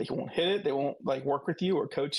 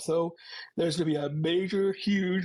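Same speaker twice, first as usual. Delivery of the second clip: speaking mid-yawn; 2 semitones higher than usual. Speaker answering a question about new axes, yawning. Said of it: "I'm sorry, I'm yawning".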